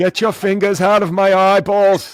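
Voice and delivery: very loud, shrill, poorly done yell. Doing a bad impression of Bernie Sanders having his eyes gouged: Bernie Sanders impression. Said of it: "is that your Bernie Sanders?".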